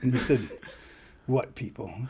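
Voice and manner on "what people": gruff, laconic put-on voice. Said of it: "Kind of like Clint Eastwood or something".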